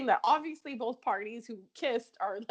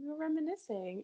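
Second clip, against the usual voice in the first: soft voice, much quieter; 3 semitones higher, 7 dB quieter than usual. Recounting Kim's visit to Julian, the speaker quotes her in a really soft voice. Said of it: "Like in a really soft voice".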